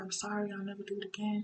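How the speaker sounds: soft, weepy, blubbering boohoo crying voice. Retelling how he broke down apologizing, imitating someone crying. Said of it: "he's like boohoo crying".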